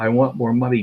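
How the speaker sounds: ordinary delivery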